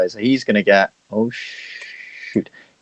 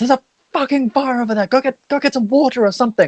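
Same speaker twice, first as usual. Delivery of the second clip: shrill, very high-pitched, rushed panicked screaming. Voicing a librarian who spots a fire: librarian screaming in panic. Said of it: "screaming now".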